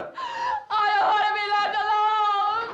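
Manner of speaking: high, loud, slow scream.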